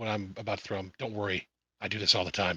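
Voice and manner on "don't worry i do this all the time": hushed half-whisper, acted in character. Voicing a character who half-whispers to a companion before throwing him: half-whispering in character. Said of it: "I whisper in his ear".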